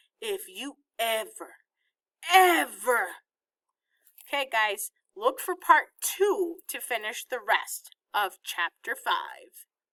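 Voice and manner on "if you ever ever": loud, slow snake woman voice, ever stretched out. Narrating Mamma speaking again to the hypnotized Vi, in Mamma's horrible snake woman voice. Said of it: "Mamma's horrible snake woman voice".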